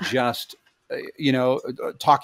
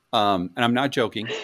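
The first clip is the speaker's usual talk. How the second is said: normal talking voice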